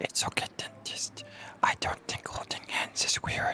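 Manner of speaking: hushed whisper. Character leaning close to whisper to the dentist in a role-play game: whispering. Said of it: "waddle up to dentist and whisper something".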